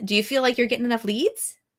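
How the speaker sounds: pitch climbs upward at the end on leads. Demonstrating upward inflection at phrase ends, rising at the end on leads. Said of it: "You hear that?".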